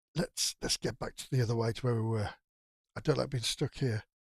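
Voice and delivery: low, hushed voice, kept down. A player speaks in character to the group during the game, in a low voice. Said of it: "in a low voice".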